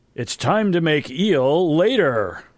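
loud, high, put-on disguised stranger voice. Casting an illusion that calls out in the library: loud disguised voice. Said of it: "I say in a voice that's not mine".

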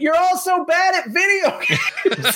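play-acted shrill, very high, drawn-out yell. Recalling the team getting fifth in a game, retelling own yell. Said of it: "I just yelled".

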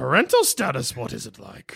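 sing-song character voice with pitch swooping up and down. Playing a school counselor welcoming a student in a skit: Yoda voice. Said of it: "I guess I'll be Yoda".

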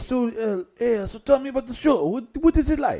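attempted Italian voice. Telling a story about a booking, quoting the club owner in a put-on Italian accent. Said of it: "that was Italian, voice. That was my attempt".

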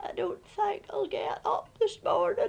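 hoarse croaky voice. Telling of feeling ill and going back to bed, retelling a croak. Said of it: "I croaked".

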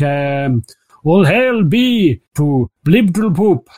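slow, drawn-out priestly proclaiming cry, calling out. Narrating to a player, voicing a priest making an offering, shouting at the top of his lungs. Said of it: "shouting at the top of his little gilly lungs".

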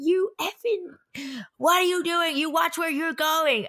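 mock heated screaming. Retelling how a man screamed at a woman, imitating someone screaming. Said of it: "was like screaming at her".

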